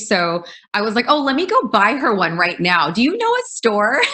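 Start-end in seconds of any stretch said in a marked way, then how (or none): 1.1-4.0 play-acted biting sarcastic tone, high and swooping. Retelling own reply to a woman's question in a park: retelling a sarcastic reply. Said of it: "the sarcastic stage".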